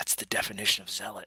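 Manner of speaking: leaning-in half-whisper, said as an aside. A player's character leans over to Lexa and half-whispers a remark, half-whispering. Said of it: "I lean over and I whisper".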